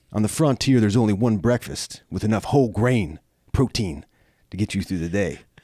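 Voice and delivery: put-on raspy commercial announcer voice. Offering a raspy ad read to a pancake brand: mock raspy ad read. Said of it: "any brands out there that need a raspy, you know, ad read".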